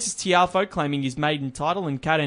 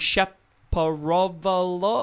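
very slow, puzzled, lost-sounding delivery. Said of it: "is looking at it and going".

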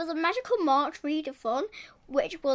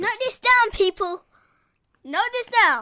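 very loud, high announcer-style shout; 6 semitones higher, 8 dB louder than usual. Telling people to note down a book's author: shouting. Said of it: "Don't need to shout".

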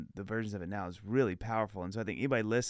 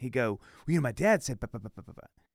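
imitated fast-talking kid voice, rapid chatter; 3 semitones higher, 5 dB louder than usual. Retelling how a boy kept quoting his dad, imitating a fast-talking kid. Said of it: "He's the fastest talking human being".

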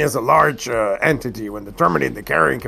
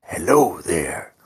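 sneaky, stealthy, carrying stage whisper; 5 semitones lower than usual. A player's character stealthily approaches someone and greets them, whispering. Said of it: "I would whisper".

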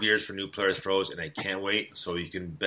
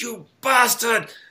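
put-on angry outburst, higher and louder; 8 dB louder than usual. Retelling how a TV character acts when he gets mad: imitating an angry Basil Fawlty. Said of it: "when he gets mad, he's like".

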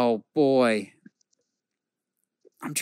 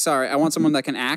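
normal talking voice

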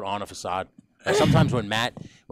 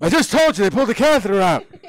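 put-on very high, loud, squawking cranky old man voice. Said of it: "let's play it out".

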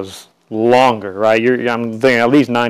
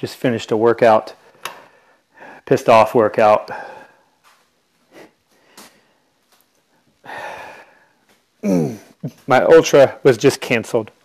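winded, out of breath, catching breath. Host opening the show just after finishing a workout, winded. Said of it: "Sorry if I sound winded at all".

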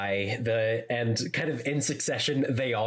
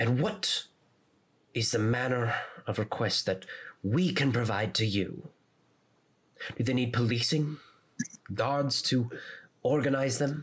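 intense, fierce, echoing stage whisper. Narrating a scene, voicing a woman who slams her fist: intense echoing half-whisper. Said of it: "in a intense whisper that kind of echoes across the area".

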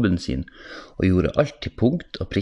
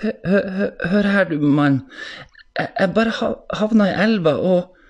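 halting nervous stammer, very high and very slow; 12 semitones higher than usual. A character who fell in the river stammers an explanation to a man, nervous stammer. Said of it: "Han stammet frem noe nervøst".

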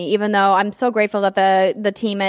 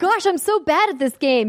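put-on mimicked child voice, higher pitch; 9 semitones higher than usual. Retelling what a child teammate kept saying: imitating a child player. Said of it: "he kept saying the whole time".

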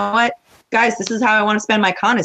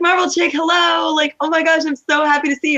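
high, gushing, fawning, effusive, play-acted; 9 semitones higher than usual. Speaker retells spotting a woman and greeting her, retelling a gushing greeting. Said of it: "all of the gushing that she had given".

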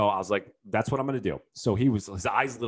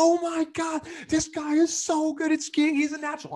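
mock very high-pitched screamed yell. Skier retells his buddy, cameras out, as he flies past: retelling a buddy's scream. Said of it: "he's got his cameras out and he's screaming".

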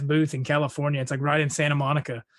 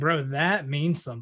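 ordinary talk, nothing marked

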